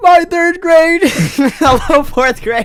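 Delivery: very high, giggling and laughing through words. Reading a post aloud and reacting to it: laughing while talking. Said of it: "Why am I laughing so much at this?".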